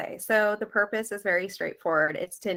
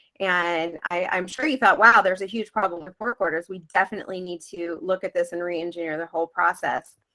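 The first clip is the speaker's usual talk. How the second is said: ordinary delivery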